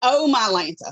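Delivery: sudden, loud, startled, caught-off-guard exclamation. Asked to say the phrase as when something gets you: exclaiming as if caught off guard. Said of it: "if you're in the middle of something and something just gets you".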